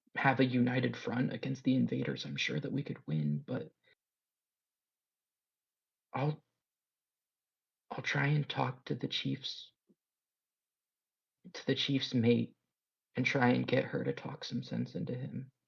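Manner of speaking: speaking quietly. Voicing a translator who turns a player away from the chief: hushed voice. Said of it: "speaks in a hushed voice".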